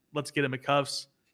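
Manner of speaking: ordinary talk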